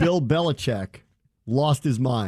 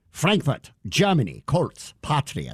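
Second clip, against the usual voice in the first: put-on, mock German accent. Listing a game played in Frankfurt, joking: put-on German accent. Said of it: "I can't talk like a German?".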